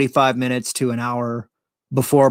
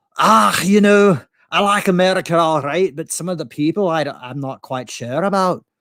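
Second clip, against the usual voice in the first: put-on raised-pitch Scottish accent; 5 semitones higher than usual. Retelling a chat with Americans, the speaker answers in a Scottish brogue. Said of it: "do a pretty good Scottish brogue".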